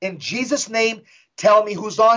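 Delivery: plain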